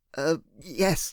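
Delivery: low mumbling, muttering. Reading a tense phone call aloud, the narrator answers: mumbling. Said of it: "I mumbled".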